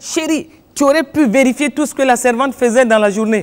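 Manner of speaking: chérie said coldly, not sweetly.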